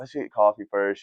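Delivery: ordinary delivery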